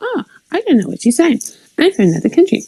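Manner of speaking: puffed-up, pompous delivery. Speaker mocks the way the person they address talks; mocking a self-important tone. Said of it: "you say your words like you're so important".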